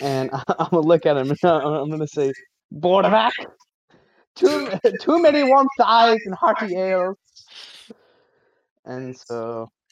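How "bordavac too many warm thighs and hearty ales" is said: very high, loud, squeaky small goblin voice. A player voices a goblin speaking to the other goblin after slapping him: small goblin voice. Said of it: "being the small goblin that he is".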